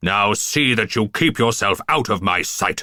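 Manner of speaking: snarled, menacing, threatening voice. A narrator reads a man's words after he bends a poker, snarling. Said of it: "he snarled".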